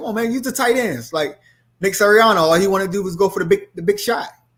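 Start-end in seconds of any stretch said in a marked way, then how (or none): 0.0-1.1 put-on higher-pitched yell. Retelling yelling at the tv during last night's game: imitating own past yelling. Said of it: "I was yelling at the T V".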